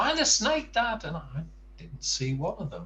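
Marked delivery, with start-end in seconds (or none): 0.0-1.0 put-on very high-pitched shout. Retelling a walk with the son spotting snakes: imitating someone shouting. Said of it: "he was shouting".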